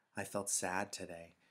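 plain

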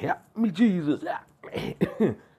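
very slow, high, drawn-out, desperate crying out. Speaker acting out people calling on jesus, mock desperate calling out. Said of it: "Going to be here saying".

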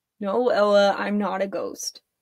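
ordinary delivery, nothing marked

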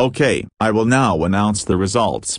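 ordinary delivery, nothing marked

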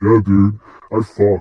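booming, very deep, loud bro voice, pushed down. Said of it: "now your voice is that deep".

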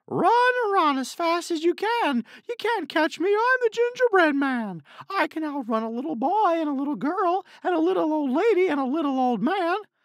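very high, very loud bragging, taunting shout. A storyteller voicing the runaway Gingerbread Man, shouting as the Gingerbread Man.

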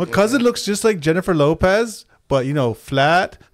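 bad put-on Indian accent. Speaker trying out fifteen minutes of indian humor, bad indian accent. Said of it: "What fucking accent is that?".

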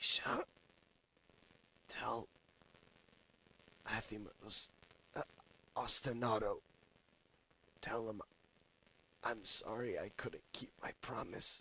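hushed, very quiet, soft-spoken voice. After an explosion, a character turns to a companion, quiet voice. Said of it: "he just says with a quiet voice".

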